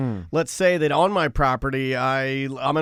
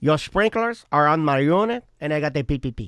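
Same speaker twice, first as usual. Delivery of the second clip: put-on, played-up Spanish accent. Offering to say something weird, put-on Spanish accent. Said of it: "say something weird in a Spanish accent".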